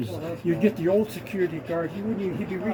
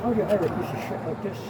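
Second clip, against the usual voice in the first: ordinary delivery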